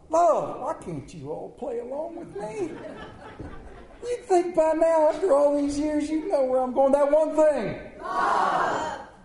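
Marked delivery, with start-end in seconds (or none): 6.9-9.0 yelling. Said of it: "You don't have to yell".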